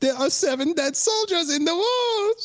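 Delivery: put-on German accent, pitched very high. Asking Matt whether they said it this way, in a German accent. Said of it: "say in a German s- accent like".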